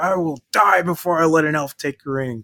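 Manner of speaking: irate, defiant high outburst. Retelling a film scene where Gimli gets angry: angry Gimli impression. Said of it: "Gimli gets all pissed off".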